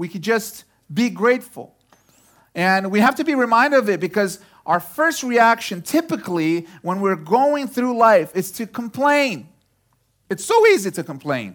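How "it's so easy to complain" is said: voice cracking. Speaking to an audience, voice cracking. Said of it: "My voice cracked there".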